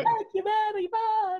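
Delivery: put-on very high-pitched Eastern European Polish accent. Imitating a performer thanking the audience: high-pitched Polish accent. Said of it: "Eastern European, Polish accent".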